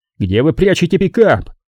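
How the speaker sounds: snapped out harshly. A man leans across the table, demanding an answer one last time, barked. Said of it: "рявкнул он".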